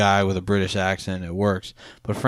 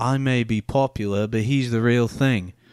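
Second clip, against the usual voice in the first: put-on slow, drawn-out Australian accent; 3 semitones higher than usual. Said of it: "That was an Australian accent".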